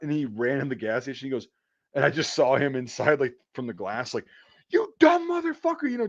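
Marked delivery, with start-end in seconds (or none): 4.7-6.1 very high, raging, furious scream. Retelling a man screaming at someone inside the gas station, retelling angry screaming. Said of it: "just he was screaming".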